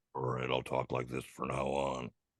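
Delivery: very low, hushed bass rumble, very quiet. Told to add bass to the voice, speaker answers in a deep bass voice. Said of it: "We need to put more bass in your voice".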